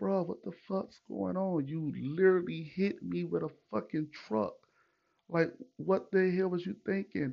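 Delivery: mock heated, angry yelling with cursing. Retelling confronting a truck driver who hit them: imitating own angry yelling. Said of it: "I'm mad. I'm yelling".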